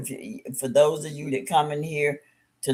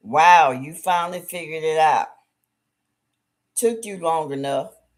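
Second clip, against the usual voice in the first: mocking, belittling, sarcastic tone; 4 dB louder than usual. Giving an example of using sarcasm to belittle someone, sarcastic and belittling. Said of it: "Using sarcasm to belittle someone".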